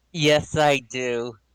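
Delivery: disappointed, let down. Asked whether he remembers a fight from the first campaign, he answers, sounding disappointed. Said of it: "You sound disappointed".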